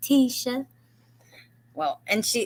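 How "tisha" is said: sugary, sweet, pitched-up cooing tone. Retelling a clip where a woman teases Tisha: imitating a sweet-talking woman. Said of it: "talking to her in this sweet way".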